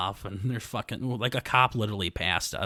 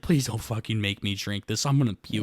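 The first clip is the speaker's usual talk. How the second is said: mock, acted-out near-crying voice. Retelling how the groom's brother begged not to drink the shot, imitating someone about to cry. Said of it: "he sounded like he was about to cry".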